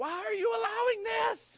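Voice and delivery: mock very high cry climbing upward. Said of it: "he cries out".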